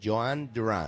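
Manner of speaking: anglicized, American-accent pronunciation. Showing how to say the name with an American accent: American-accent pronunciation. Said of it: "How do I say his name with my accent?".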